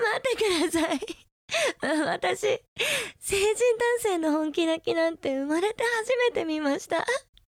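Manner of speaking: high, helpless laughter through the words, laughing very hard. Watching a grown man beg in tears, laughing hard. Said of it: "笑いすぎてお腹痛い".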